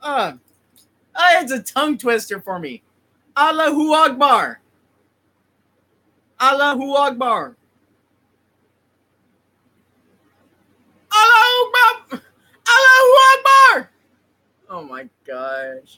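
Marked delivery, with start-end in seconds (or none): 3.4-13.9 very loud shout, as loud as possible, higher. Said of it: "yell this out loud, as loud as you can".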